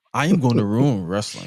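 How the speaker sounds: fake flat scripted promo delivery. Imitating a wrestler's backstage promo: imitating John Cena's monotone promo. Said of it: "him choosing the monotone version of saying".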